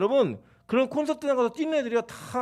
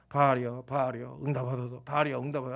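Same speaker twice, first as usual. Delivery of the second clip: calm, low, soft calling voice. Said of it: "처음에는 뭐, 이렇게 했죠".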